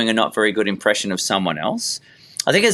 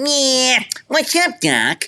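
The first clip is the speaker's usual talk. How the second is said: very high, drawn-out put-on cartoon rabbit voice; 13 semitones higher than usual. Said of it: "anyone can walk in and go".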